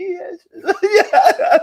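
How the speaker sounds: mock very high-pitched, half-crying, near-tears voice. Retelling his reply when asked if he wants the ball: imitating someone half in tears. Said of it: "kind of like half in tears".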